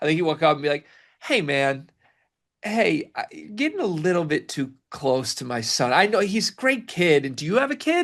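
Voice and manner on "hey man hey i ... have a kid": slow, swooping, drawn-out sing-song, pitched up. Speaker cuts in to imagine how the other speaker would act, Riley impression. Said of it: "here's my impression of Riley in this setting".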